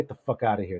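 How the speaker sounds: cold, dead serious, low menacing tone. Voicing a club boss whose smile drops, ordering players out: dead serious menacing order. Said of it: "Real serious".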